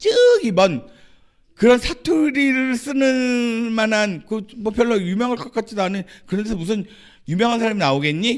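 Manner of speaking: high, loud, sneering scoffing jeer.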